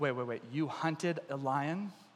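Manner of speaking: very low, hushed, quiet voice. Retelling David's story, voicing King Saul's reaction to David's lion hunt. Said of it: "Now King Saul's thinking".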